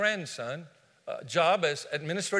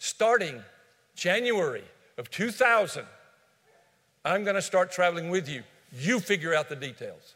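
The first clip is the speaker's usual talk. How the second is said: imitated stern voice. Retelling a wife's words when she insisted on traveling along: imitating a stern voice. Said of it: "with sternness in her voice".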